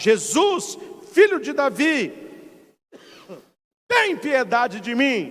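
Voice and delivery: play-acted, earnest, imploring pleading cry. Retelling how the blind man cried out to Jesus: imitating a man shouting. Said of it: "o homem começou a gritar".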